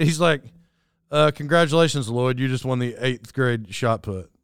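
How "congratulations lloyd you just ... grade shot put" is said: real, heavy sarcasm. Retelling how Ernie reacted to a throw: imitating a sarcastic congratulation. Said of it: "but real sarcastic".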